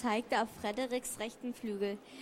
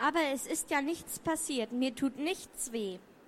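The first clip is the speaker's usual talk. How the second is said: ordinary delivery, nothing marked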